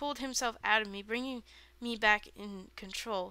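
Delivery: plain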